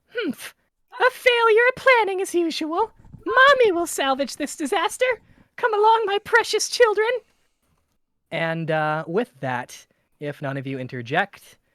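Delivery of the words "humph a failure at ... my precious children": very high, shrill, loud mother voice. Narrator voices the mother bear cutting back in, in a shrill mother's voice. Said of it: "the shrill voice cuts back".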